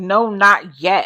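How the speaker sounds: dismissive, snippy tone with attitude. Retelling a mother's reply to her daughter asking to eat: imitating a reply with an attitude. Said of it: "she said it with an attitude".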